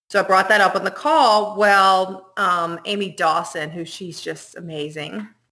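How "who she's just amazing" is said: laid-on, heavily sarcastic delivery. Describing a person who was on a disaster call: sarcastic praise. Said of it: "I'm being very sarcastic".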